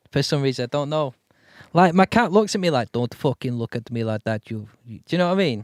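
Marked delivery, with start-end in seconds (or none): 2.9-4.5 put-on Russian accent, much lower, quieter. Voicing how their cat seems to talk when it stares, in a russian accent. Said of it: "it's always got like like a Russian accent".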